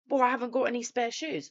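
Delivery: mock furious, indignant, high angry screaming. Speaker retells what a man screamed at them after staff asked him to remove shoes. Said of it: "screaming at me".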